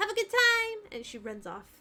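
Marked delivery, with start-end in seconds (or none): 0.0-0.9 put-on little-girl voice, very high and loud. Voicing a small girl handing over a key: small girl's voice, sounding different. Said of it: "the child's voice speaks up".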